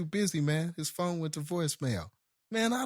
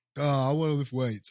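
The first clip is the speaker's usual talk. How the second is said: put-on tipsy, drunken delivery; 4 dB louder than usual. Guessing how a drunk person wanting to lift weights acts; mock drunk voice. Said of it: "how a drunk person that wants to lift weights would act".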